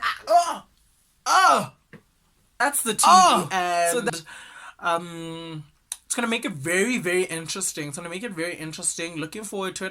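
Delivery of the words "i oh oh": high-pitched, loud, smug-sounding voice. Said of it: "you're like".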